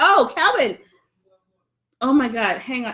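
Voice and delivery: laughing so hard crying. Reading viewers' comments on the phone, crying with laughter. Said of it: "I'm, like, really crying".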